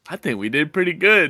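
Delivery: mock muttering under breath. Retelling what she said while walking: imitating someone muttering under her breath. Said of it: "under her breath".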